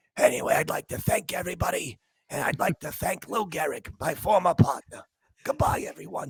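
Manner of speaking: whispered throughout, soft, breathy and barely voiced. Mimicking a man who tried to whisper like Babe Ruth, mock Babe Ruth whisper. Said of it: "he was trying to whisper like he was Babe Ruth".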